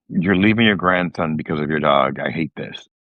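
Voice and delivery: ordinary talk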